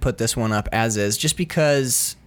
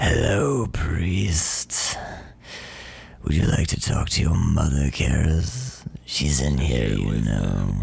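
very low, slow, rough, strained, crushed-throat demon rasp; 9 semitones lower than usual. Doing a demon voice for an episode, addressing a priest, crushed-throat demon voice. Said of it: "me doing demon voice. I love crushing the old vocal cords down and just like".

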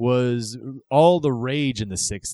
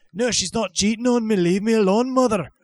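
fake Irish accent pitched very high; 10 semitones higher, 3 dB louder than usual. Acting out a son answering his mother: put-on Irish accent. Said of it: "Stop being Irish".

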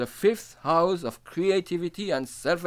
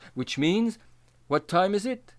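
ordinary delivery

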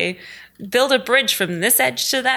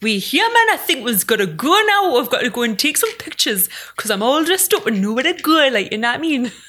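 full Newcastle Geordie accent; 3 semitones higher than usual. Asked to sign off in the accent they do, speaking in a Geordie accent. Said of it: "Would you sign off in that smashing Geordie accent".

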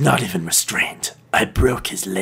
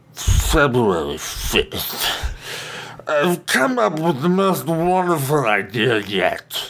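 put-on drunk voice, pitched higher; 5 semitones higher than usual. Voicing a character while telling a story: drunk-sounding character voice. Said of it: "the way you're doing the voice just makes me think that he turned into a drunk Orson Welles".

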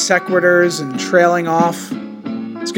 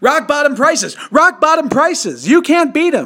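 put-on enthusiastic salesman hype, much higher; 9 semitones higher than usual. Recalling radio used-car commercials, speaker imitates a super enthusiastic salesman. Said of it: "super enthusiastic about selling his used cars".

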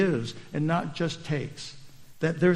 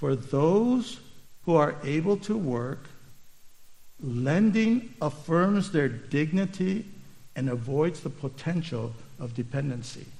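very slow, deliberate, each word laid out; 4 dB quieter than usual. Speaker wants everybody to get this point, saying it very slowly. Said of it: "let me just say this very slowly".

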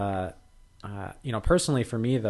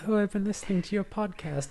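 put-on, very high-pitched, lovely British accent; 11 semitones higher than usual. Speaker quotes a visiting researcher who recorded them, in a lovely British accent. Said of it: "in her lovely British accent".

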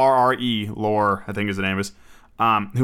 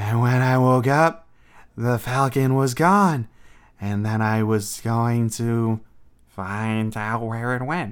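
bad, slow, drawn-out strange voice. Describing an actor's odd voice, doing a bad Peter Lorre impression. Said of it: "That was terrible".

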